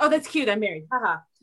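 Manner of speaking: mock playful, jokey, light tone. Retelling how one says being married: imitating own joking remark. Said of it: "kind of hilariously".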